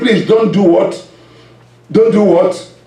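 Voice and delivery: plain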